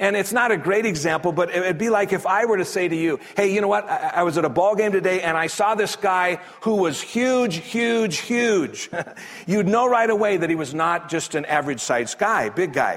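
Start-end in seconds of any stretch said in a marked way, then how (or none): 7.0-8.9 heavy stress on huge, hammered home three times. Giving an example of repetitive emphasis to listeners, stressing huge. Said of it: "my repetitive emphasis on the word huge".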